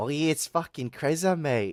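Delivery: heavy, thick, laid-on Australian accent. Streamer shows how they usually sound off stream, in an Aussie accent. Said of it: "Usually [name] sounds Aussie as fuck, mate".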